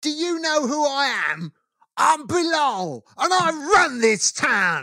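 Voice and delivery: mock very high, very slow, top-of-the-lungs yell. Retelling a man's fight with a bus driver in Slough, imitating someone shouting. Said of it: "shouts at the top of his voice".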